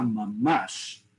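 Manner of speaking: 'mamash' said sarcastically, heavily exaggerated. Sarcastic reply about a twenty-four-degree winter: exaggerated sarcastic 'mamash'. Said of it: "so totally in a sarcastic sense. You really want to emph- over exaggerate how you speak".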